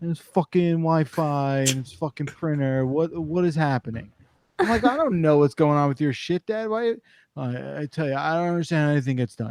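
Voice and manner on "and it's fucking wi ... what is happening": put-on New York Queens accent. Act out your dad, a Queens guy, calling you for tech support, imitating Dad's Queens accent. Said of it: "he gets this accent in his voice where he calls up and he goes".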